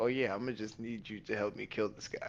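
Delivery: very calm, composed, even. Describing how another character in the story makes a request: very calm. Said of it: "he's very calm when he's like".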